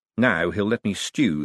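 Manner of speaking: plain reading voice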